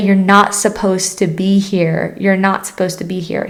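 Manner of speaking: put-on mean, stern, angry voice. Retelling what the people chasing the speaker kept saying: retelling a mean, stern voice. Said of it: "in a very, very like mean, stern, angry voice".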